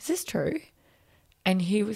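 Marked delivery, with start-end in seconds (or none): 0.0-0.6 mock weeping, very high-pitched and tearful. Retelling crying with her boss after the news: retelling crying while asking. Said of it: "that I started crying, going".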